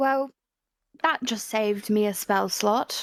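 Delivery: soft whispered speech. A character speaks to Fujin in a church during a game scene, whispering. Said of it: "she whispers to Fujin".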